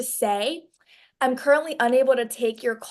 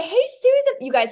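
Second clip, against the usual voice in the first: very high, loud, over-the-top eager, enthusiastic voice; 9 semitones higher, 5 dB louder than usual. Greeting Susan by voice rather than text, very enthusiastic greeting. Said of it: "with the most enthusiasm ever".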